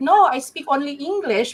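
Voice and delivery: put-on high-pitched Filipino accent. Retelling how a Filipino-Canadian answered as a child: imitating Ron Jossel's Filipino accent. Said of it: "and so he would sound like this".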